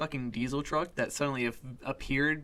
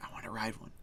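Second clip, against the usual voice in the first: very quiet, hushed whisper under the breath; 4 semitones lower, 11 dB quieter than usual. Retelling a walk past horses, quoting yourself: whispering. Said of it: "the entire time I'm just whispering".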